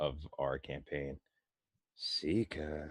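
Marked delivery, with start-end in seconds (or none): 2.0-2.9 demanding, exasperated, impatient delivery. A player telepathically calling to another character in their campaign, impatient. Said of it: "in my impatient voice".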